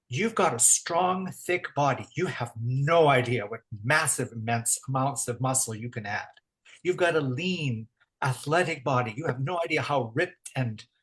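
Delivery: ordinary delivery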